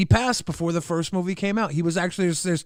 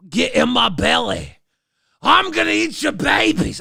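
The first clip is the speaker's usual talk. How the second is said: loud, rough, pitched-up character voice; 7 semitones higher, 6 dB louder than usual. Trying again at the line a viewer asked for: Fat Bastard voice. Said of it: "Why do you sound like Shrek?".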